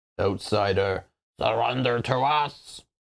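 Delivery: wet, gurgling creature voice. A narrator voices an unseen creature answering the call of who's there: gurgling voice. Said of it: "Then a gurgling voice responds".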